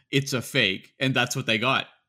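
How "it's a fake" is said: plain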